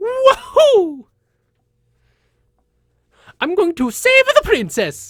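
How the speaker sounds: very high, loud, shouted cartoon Italian accent. Explaining how to build the voice from a stereotypical Italian accent: Mario voice. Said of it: "mash those together, and you get Mario".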